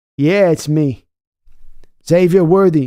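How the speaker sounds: loud fake New York accent slipping into Boston. Playing a dad's voice heard by his sleeping son, fake new york accent turning boston. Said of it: "He just became Boston".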